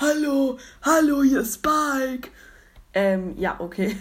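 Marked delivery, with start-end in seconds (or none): 0.0-2.3 very slow, drawn-out, high, loud cartoon character voice. Speaker says he can copy the voice too, then does Spike voice. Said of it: "ich kann die Stimme auch mit nachmachen".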